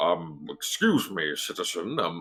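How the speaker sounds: very slow, halting, hesitant guard voice. Voicing a guard who stops the players for inspection: city guard voice. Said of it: "he holds out a hand slowly to you".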